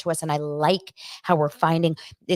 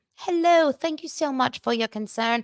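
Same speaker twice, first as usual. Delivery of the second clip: bad put-on British accent, pitched higher; 8 semitones higher than usual. Imagining a royal saying she is fine on camera: Kate Middleton impression, horrible British accent. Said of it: "I have horrible British accent".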